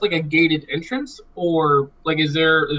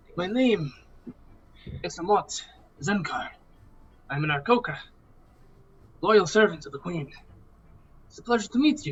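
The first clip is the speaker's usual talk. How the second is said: character voice with a put-on French accent; 2 semitones higher, 5 dB quieter than usual. Introducing an Aarakocra ranger character to the party: French accent. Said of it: "Ranger Aarakocra with a French accent".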